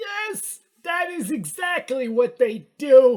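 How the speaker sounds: high put-on elderly man voice, played for laughs. Agreeing loudly with another speaker's explanation: old man voice. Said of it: "It's a good old man voice".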